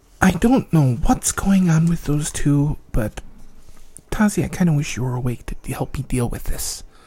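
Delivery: quiet mumbling to herself. Voicing a character sitting beside a sleeping friend: muttering to herself. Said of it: "just kinda mutters to herself".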